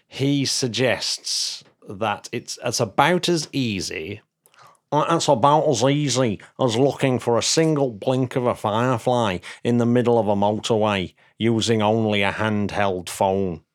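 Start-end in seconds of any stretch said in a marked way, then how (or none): 4.9-13.6 put-on Manchester accent. Reading out what Ian from Manchester suggests: Manchester accent. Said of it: "that was my Manchester accent".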